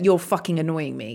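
ordinary talk

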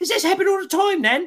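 very high, loud, cheery, chirpy British lilt. Retelling a British woman going up to everybody: imitating a cheery British woman. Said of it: "the cheeriest, most British woman".

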